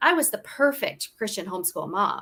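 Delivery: plain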